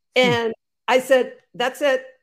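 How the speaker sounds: ordinary delivery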